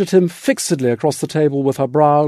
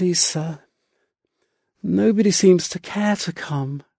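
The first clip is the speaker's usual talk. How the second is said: flat, dull, resigned mumble with all fight gone; 3 semitones higher, 4 dB quieter than usual. Narrator reads a frightened woman answering the narrator's question, muttered, dully resigned. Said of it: "she muttered, dully resigned all at once".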